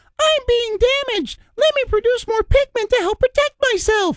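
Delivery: tiny, very high-pitched character voice. Speaking to a listener about tanning, the speaker voices the skin: talking-skin voice. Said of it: "That's what your skin sounds like".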